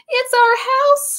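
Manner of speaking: tiny squeaking mouse voice, very high-pitched. The Mother Mouse speaks to George in a squeaky mouse voice. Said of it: "squeaked the Mother Mouse".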